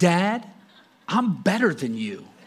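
put-on, dead-sure tone of total conviction. Retelling what the son says to his dad: imitating a son's total conviction. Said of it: "says it with such conviction in his voice".

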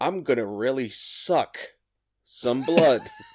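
very loud, high-pitched, drawn-out belting. Joking about an actor's method acting for a vampire role: Jared Leto impression. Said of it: "was that an authentic Jared Leto impression?".

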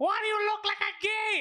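put-on, high-pitched yelling. Retelling how his mom yells at him from her car, imitating his mom yelling. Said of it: "she's always yelling".

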